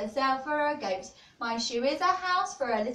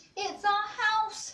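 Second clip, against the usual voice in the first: high-pitched, squeaking little mouse voice; 7 semitones higher than usual. Reading a story aloud, the Mother Mouse answering George, squeaky mouse voice. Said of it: "squeaked the Mother Mouse".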